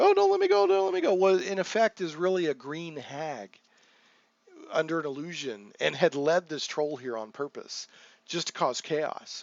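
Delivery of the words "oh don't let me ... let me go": very high, fast, frantic, terrified pleading tone. A game master retells a disguised hag clinging to a player: acting out a terrified plea. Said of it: "I'm just terrified".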